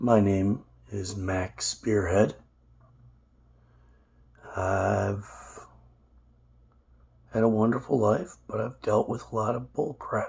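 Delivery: hoarse, strained voice. Introducing oneself in a life-story video, hoarse voice from laryngitis. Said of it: "I'm dealing with a case of laryngitis".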